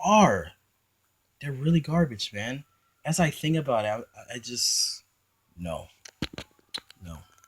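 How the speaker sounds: angry, heated, disgusted, worked-up rant. A video host ends a rant to viewers before signing off, angry. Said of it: "I know I sound really angry at this".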